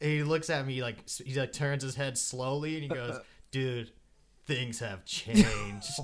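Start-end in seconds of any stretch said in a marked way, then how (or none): 3.5-6.0 dark, portentous, ominous, foreboding voice. Retelling what a guy said to him while they were tripping, imitating an ominous voice. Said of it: "all ominously".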